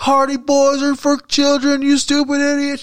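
put-on raw, high, heckling yell. Retelling shouting at the champs from a quiet crowd, retelling a yell. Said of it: "And I'm just yelling".

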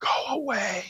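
tiny, very high-pitched whisper. Retelling how a small boy answered a teacher: imitating a child's whisper. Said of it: "he just gave this little whisper".

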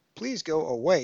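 resolute. Tegan answers Mariner after his declaration, firmly. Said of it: "she said firmly".

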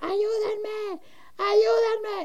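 acted, high, frantic woman's scream. Retelling hearing a woman scream at four in the morning: retelling a woman screaming for help. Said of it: "que gritaba".

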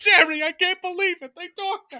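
very high, loud, cartoony delivery. Imitating a movie line's delivery: George Costanza delivery. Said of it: "delivers it exactly like George Costanza".

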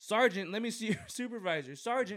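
shrill, high, full-throated loud yelling. Retelling how a fake cop acts when arrested: imitating Jeremy DeWitt shouting. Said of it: "the whole time he's just shouting".

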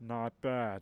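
big storybook ogre voice. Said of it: "His ogre voice".

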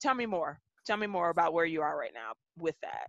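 steady, soft, very calm tone. Recalling their first response when someone criticised them, retelling a very calm reply. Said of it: "in a very calm voice".

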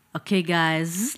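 casual tone with the word "guys" drawn out. Saying the podcast sign-off while imitating Josh's voice. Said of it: "I'm trying to say it like Josh".

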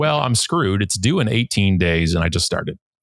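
ordinary talk

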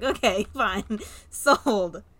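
loud, laughing, amused tone.

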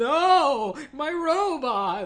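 high, slow wailing tantrum.

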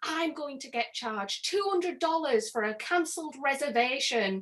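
mock shouting. Retelling how a guest at crowd control shouted down: imitating someone shouting. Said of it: "he was, like, shouting down at me".

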